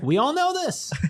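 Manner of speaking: very high-pitched, put-on caricature voice. Doing an impression of Mike Luke for the others: Mike Luke impersonation. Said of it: "that's my Mike Luke impersonation".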